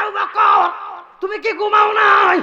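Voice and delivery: high, loud shouted call.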